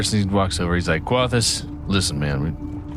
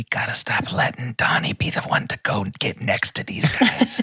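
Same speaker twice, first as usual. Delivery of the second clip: higher-pitched character whisper; 3 semitones higher than usual. In the game, Fiddles leans over his shoulder to Glint and Sue, Fiddles whispering. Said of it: "Fiddles whispers to Glint and Sue".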